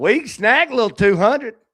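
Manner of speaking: put-on country drawl. Repeating a line just said, laughing at it: country-sounding drawl. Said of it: "I sounded so country when I just said that".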